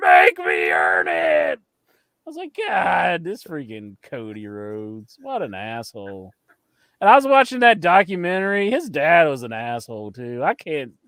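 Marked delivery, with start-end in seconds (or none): 0.0-1.6 mock very low, deep, dragged-out roaring scream. Retelling what a man yelled after people held him back: imitating Cody Rhodes screaming. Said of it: "He just started screaming".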